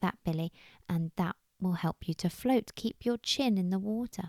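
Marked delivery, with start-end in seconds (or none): none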